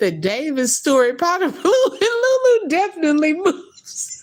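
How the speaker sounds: said through laughter, very high and swooping. Reading a comment aloud that she can't read without laughing: laughing while reading. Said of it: "I can't even read it without laughing".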